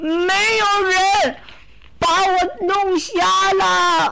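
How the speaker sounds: high, slow, wailing, sobbing crying roar. The blinded sea god's son answers the cyclopes' question, crying and roaring. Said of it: "海神的儿子哭吼着".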